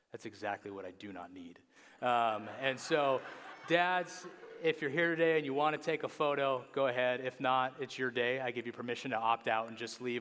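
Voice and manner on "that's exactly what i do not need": dry, flat, very low, hushed deadpan. Retelling how Jeff answered her offer of help, imitating Jeff's deadpan. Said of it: "Jeff looked at her deadpan".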